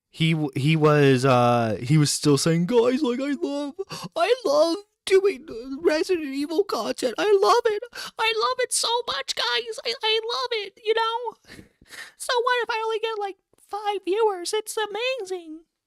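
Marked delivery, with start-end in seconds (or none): 2.7-15.6 very high-pitched put-on voice. Imitating a content creator who claimed to love gaming content, high-pitched imitation. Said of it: "went for a high pitched voice there".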